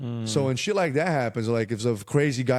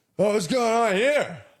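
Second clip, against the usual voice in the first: play-acted drunk big man, voice very high; 9 semitones higher than usual. Retelling a drunk guy outside asking what's going on: imitating a drunk man. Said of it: "Like that".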